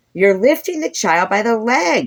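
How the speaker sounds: very high, shrill cry climbing into a squeal. Reading a story aloud, a teacher cries out in alarm: high-pitched voice rising to a squeal. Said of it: "her high-pitched voice rising almost to be a squeal".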